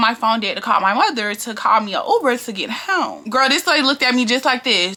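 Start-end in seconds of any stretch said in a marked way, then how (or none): none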